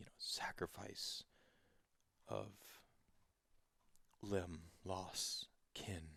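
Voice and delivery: very slow, drawn-out, hushed, barely audible whisper. Narrator voices a voice heard again as you walk toward the tree, whispering. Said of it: "You hear the voice once more whisper".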